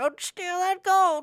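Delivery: tiny, silly, very high, slow little voice. Acting out the warning voice in his head, in a little funny voice. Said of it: "it will be in a little funny voice".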